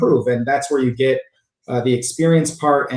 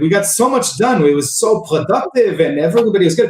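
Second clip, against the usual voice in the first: put-on poor Israeli accent; 6 semitones higher than usual. Retelling the guy's reply after a bad meeting, in a terrible Israeli English accent. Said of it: "my terrible Israeli English accent".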